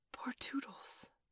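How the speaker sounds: hushed, breathy, very soft whisper. Bending over Wendy and listening, speaking of poor Tootles, whispered. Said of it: "he whispered".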